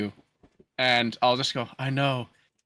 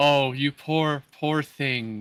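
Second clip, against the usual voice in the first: slow, soothing, cooing pitying tone. Helping a sick drunk character aboard: cooing sympathy in character. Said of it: "just do the".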